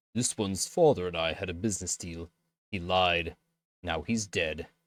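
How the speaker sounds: attempted Norwegian accent drifting into Scottish. Narrator reads the Varl's reply to the men in an attempted Norwegian accent. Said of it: "Like Scottish or I don't know how to do a Norwegian accent".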